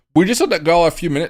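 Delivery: voice breaking upward. Discussing which tokens still have room to grow, voice cracking. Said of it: "my voice crack".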